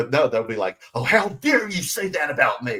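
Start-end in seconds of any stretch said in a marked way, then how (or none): 0.9-2.8 put-on easily offended, affronted indignation, pitched up. Imitating a person who can't take a joke: mock offended snowflake. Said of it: "they're a bunch of snowflakes".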